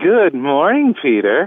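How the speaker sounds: put-on sexy voice, slow, high and sultry. Claiming he can do it as well as someone else, the speaker tries a sexy voice. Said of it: "Don't make it too sexy".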